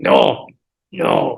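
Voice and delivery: bad, clumsy, put-on non-English accent. Recalling a woman who spoke no English and what she said, bad Marie accent. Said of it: "that was my bad Marie accent".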